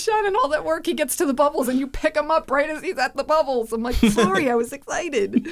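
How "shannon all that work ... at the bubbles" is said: high, fed-up, exasperated scolding shout. Retelling how someone yelled at the speaker for picking up the child, acting out a yell. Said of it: "Pia started yelling at me".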